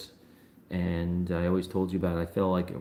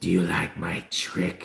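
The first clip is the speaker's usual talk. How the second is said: very slow, creaky, rough, creepy horror voice. Retelling what a strange voice said to friends who were there, in a Freddy Krueger voice. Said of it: "sounded like straight up Freddy Krueger".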